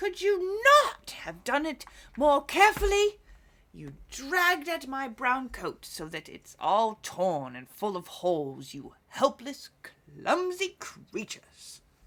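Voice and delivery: piercing, shrill, very loud scolding dwarf voice. Narrator voices the dwarf crying out after being pulled from the eagle: shrill dwarf voice. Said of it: "he cried with a shrill voice".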